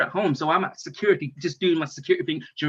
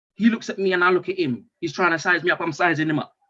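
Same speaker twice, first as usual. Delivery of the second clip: usual speaking voice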